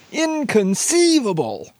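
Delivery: high-pitched, slow, mock crying out. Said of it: "you gotta say it like Wallace Shawn does".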